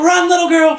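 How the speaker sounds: high, loud, desperate scream. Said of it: "He's screaming".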